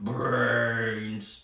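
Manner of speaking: zombie voice. Leading a brainstorm routine for everyone at home, say it in a zombie voice. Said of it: "in our best zombie voice".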